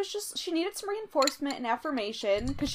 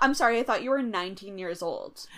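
plain

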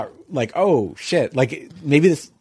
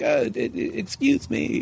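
bad put-on Eastern European accent, much higher; 9 semitones higher, 5 dB quieter than usual. Retelling what the man seated beside them said, bad eastern european accent. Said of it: "it was like an Eastern European accent".

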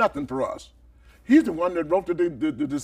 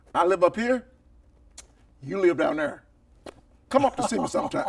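plain

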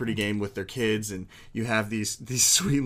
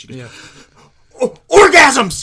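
put-on thrilled little girl voice, very high, very loud; 18 dB louder than usual. Telling a story, the speaker acts out a little girl who knows the answer, imitating an excited little girl. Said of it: "She gets so excited".

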